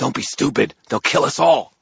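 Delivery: loud, growled, threatening voice. A woman warns a man pulling a gun from his jacket, growling. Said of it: "the woman growled at him".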